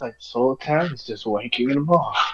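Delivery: quiet, hushed, muttered under the breath. A character mutters an aside in a scene, under the breath. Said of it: "Luna says under his breath".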